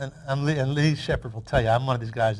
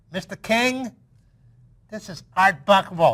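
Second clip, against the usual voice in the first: pitched-up voice with a lisp on the s sounds; 6 semitones higher, 3 dB louder than usual. Retelling a phone call from Art Buchwald, doing an Art Buchwald lisp impression. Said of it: "That's exactly how he talked".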